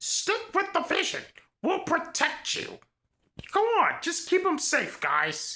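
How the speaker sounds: animated put-on voice, pitch swooping widely. Retelling a wrestling moment, doing a Paul Heyman impersonation. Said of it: "That's my best Paul Heyman impersonation".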